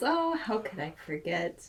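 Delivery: talking with a chuckle throughout. A game master voices a character asked about a player's rank, chuckling while talking. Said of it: "He chuckles".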